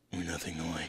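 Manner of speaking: rough-edged, gruff movie superhero voice. Quoting a stock superhero movie line: gruff superhero voice. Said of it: "the good guy with the gruff voice".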